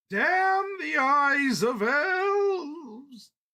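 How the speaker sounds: cheerful ghostly cry, very high, loud, booming, slow. Reading fiction aloud, the spirit turning playful: merry spectral voice. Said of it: "the spectral voice turned merry".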